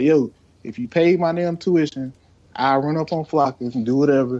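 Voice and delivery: plain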